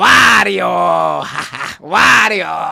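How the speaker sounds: very loud, rough, drawn-out bellowing call. Trying a Wario impression after a Luigi one: Wario voice. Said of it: "That was pretty good, I guess".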